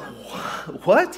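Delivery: halting, stunned disbelief, stammered "what". Retelling own reaction to shocking news: imitating own stunned reaction. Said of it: "I was stunned".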